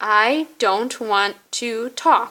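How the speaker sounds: very slow, deliberate, one word at a time. Character speaks to a hard-of-hearing listener, saying it really slow. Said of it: "I'll say it really slow for you".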